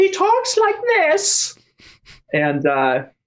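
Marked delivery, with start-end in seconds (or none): 0.0-1.6 put-on prepubescent boy voice, higher. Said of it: "puberty hasn't hit his voice".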